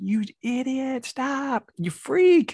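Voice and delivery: mock shrill scream, very high, very slow and drawn out. Recalling a laid-back teacher who suddenly yelled at a student: retelling a teacher's screaming. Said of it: "started screaming like".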